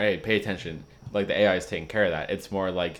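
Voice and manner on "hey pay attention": plain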